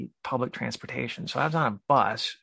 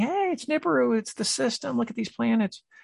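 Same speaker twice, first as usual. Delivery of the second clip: shrill, very high-pitched screaming; 11 semitones higher than usual. Retelling a dream, calling out to people on a subway: imitating own screaming. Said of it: "And I was screaming".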